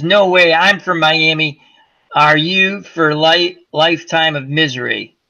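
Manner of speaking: normal talking voice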